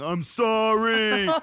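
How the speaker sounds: very high, loud, shrill sobbing wail, "sorry" stretched out. Retelling a stranger's words after being caught: imitating someone crying. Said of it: "he starts crying while jerking off and going".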